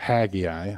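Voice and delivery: "haggai" in Southern US pronunciation. Showing how people in the South pronounce a name: Southern accent on Haggai. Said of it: "with a Southern accent".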